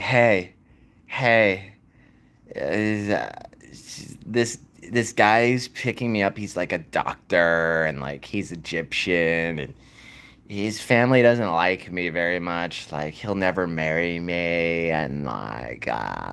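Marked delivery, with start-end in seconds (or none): 0.0-14.9 mock, imitated lispy voice. Retelling what a woman kept saying while the speaker wrote vows, imitating her lispy voice. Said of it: "she literally sounded like that".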